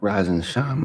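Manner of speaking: cracking voice. Greeting listeners at the start of the show: voice crack. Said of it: "that voice crack".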